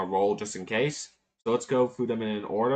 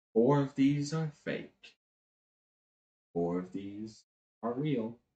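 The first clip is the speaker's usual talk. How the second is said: half-whispered, breathed cat voice, very close; 3 dB quieter than usual. Game narrator voices a cat half-whispering into a player's ear. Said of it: "The cat whispers into your ear".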